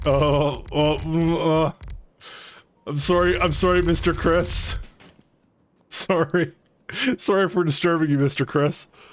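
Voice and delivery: sad, flustered, fumbling. Acting out apologizing to a game developer who forgot them: mock sad flustered apology. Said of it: "me being very sad. And just spurging out and going like".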